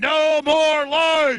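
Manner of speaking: shouting through a bullhorn. Addressing a crowd at a commemoration, shouting through a bullhorn. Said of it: "now I'm gonna go ahead and start bullhorning".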